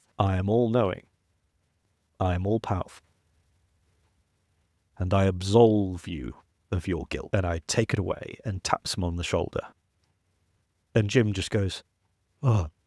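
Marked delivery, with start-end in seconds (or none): 0.2-8.4 put-on hypnotic voice. Retelling how Doctor Strange stood behind Jim and spoke, Doctor Strange hypnotic voice. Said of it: "He's got this fabulous hypnotic voice".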